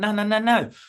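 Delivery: loud, high-pitched protest. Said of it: "you're gonna be like".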